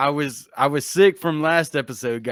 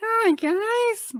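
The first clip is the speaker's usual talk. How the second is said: much higher pitched voice. Showing the others a high pitch can be done, high-pitched voice. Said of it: "I can try to do a high pitch".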